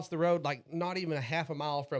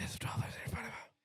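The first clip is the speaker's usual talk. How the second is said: hushed, breathy, barely voiced whispered mumble; 7 semitones higher, 9 dB quieter than usual. Retelling how a gas station cashier mumbled the total: imitating a cashier whispering. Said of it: "they're whispering".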